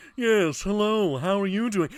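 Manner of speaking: Mid-Atlantic accent held throughout. Discussing the Mid-Atlantic accent, the speaker demonstrates it in a Mid-Atlantic accent. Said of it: "It's it's called the Mid Atlantic accent".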